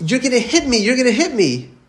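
high, play-acted little boy screaming and crying. Telling a story, acting out a little boy's words to his mother, imitating a child screaming. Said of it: "The little boy is screaming".

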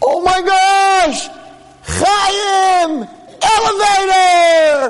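drawn-out high excited scream.

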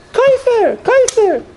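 very high-pitched, shrill, repeated cry. Imitating how someone still says the word, high voice. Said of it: "It's in a high voice".

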